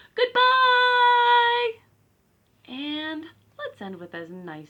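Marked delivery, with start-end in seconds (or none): 0.2-1.7 very loud, very high, drawn-out shout. Leading a goodbye rhyme, saying goodbye as loud as possible: loud goodbye. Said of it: "as loud as we can".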